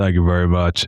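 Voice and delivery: deep, dead-level, flat monotone. Retelling how a dude answered your thanks after he signed, imitate the dude's deep monotone. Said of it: "Like in this deep monotone".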